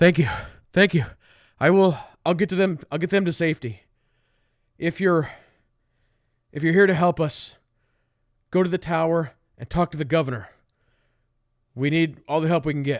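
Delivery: panting guard voice. Game master voicing a city guard who sprinted up to the party, panting. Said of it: "he's like panting a little bit".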